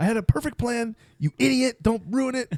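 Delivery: very high, shrieking, screaming rant. Imagining Megan screaming at the radio during this episode: imitating Megan screaming. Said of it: "screaming at the radio".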